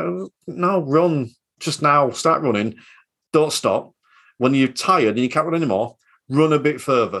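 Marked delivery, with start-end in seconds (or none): none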